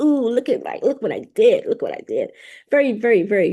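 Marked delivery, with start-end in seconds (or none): 0.0-2.3 smug, self-satisfied, swooping, sing-song bragging voice. Retelling how Oshun looked down at the people: smug Oshun impression. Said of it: "just smug".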